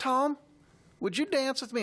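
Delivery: put-on very high voice with a slight Texas accent. Retelling how Molly asked him to dance, Molly's little Texas accent. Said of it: "with her little Texas accent".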